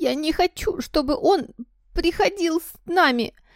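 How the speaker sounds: very high wailing shout between fake sobs. Dudley, hugged by his mother, yells between fake sobs. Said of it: "закричал Дадли между громкими притворными рыданиями".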